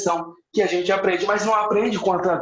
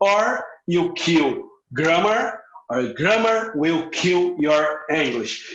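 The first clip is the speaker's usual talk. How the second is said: slow delivery with deliberate pauses; 3 semitones lower than usual. Repeating a father's favorite phrase so listeners can follow: slow, with deliberate pauses. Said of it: "E eu falo essa frase mais pausadamente, proposital".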